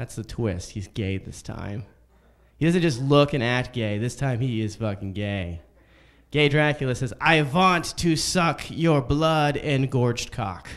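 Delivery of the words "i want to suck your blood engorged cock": lingers on each word, camped up.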